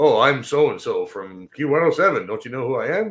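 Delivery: mock self-important, smug, arrogant radio DJ voice. Mocking local radio DJs who think they're celebrities, the speaker does mock arrogant celebrity ego. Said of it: "celebrity ego".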